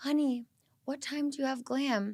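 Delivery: sugary sweet voice. Retelling being woken up by Brock: imitating Brock sounding very sweet. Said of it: "very sweet".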